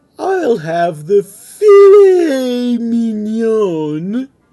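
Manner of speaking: very loud, very slow, high, snooty, haughty drawl. Urged by Martha to give it a try, the Grinch answers the waitress in a snooty voice. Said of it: "with a snooty voice".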